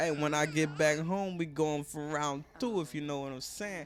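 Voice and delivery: ordinary delivery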